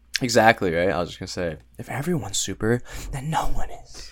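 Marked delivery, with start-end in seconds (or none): 1.7-4.1 slow, deliberate, drawn-out comic-book villain voice. Agreeing with a friend and finishing the thought, in a Joker voice. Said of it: "you said that like the Joker".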